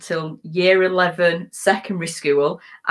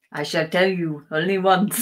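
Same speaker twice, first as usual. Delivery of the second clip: put-on French accent. Asked to do a french accent, speaker gives it a try, french accent. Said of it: "You do a French accent".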